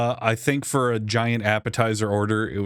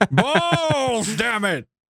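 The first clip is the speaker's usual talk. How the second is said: put-on very high screaming, screeching old man voice; 13 semitones higher than usual. Imitating an old man screaming at his text-to-speech phone: imitating an old man screaming. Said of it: "He's an old man screaming at his text-to-speech phone".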